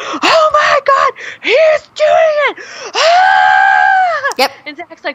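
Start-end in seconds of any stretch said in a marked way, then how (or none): 0.0-4.3 very high, very slow, shrill drawn-out shriek. Retelling the moment Baxley squatted in the water, retelling her own scream. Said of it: "I scream".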